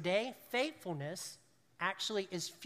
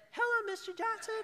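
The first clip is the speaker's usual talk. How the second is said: put-on very high, boyish, really high-pitched voice. Recalling answering the phone at seventeen, really high-pitched voice. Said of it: "it'd be really a high-pitched voice".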